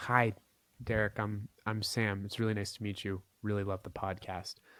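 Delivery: mild, subdued, low-energy, low-key delivery. Explaining how to match someone's level, the speaker imitates a person talking really quietly. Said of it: "if you're talking really quietly like this".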